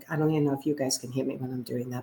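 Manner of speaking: faint, low, soft voice, barely audible. Teaching about vocal power, showing what a weak voice sounds like: very low quiet voice. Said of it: "but I'm really low".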